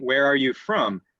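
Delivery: voice going down in pitch at the end. Speaker demonstrating English question intonation, falling intonation at the end. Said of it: "My voice goes down at the end".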